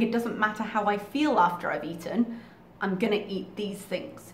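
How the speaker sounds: ordinary talk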